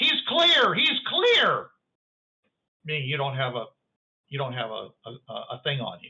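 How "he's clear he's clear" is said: play-acted, very high, shouted call-out. Describing a scene to a player, voicing the people on the other side: yelling. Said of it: "They're yelling something like".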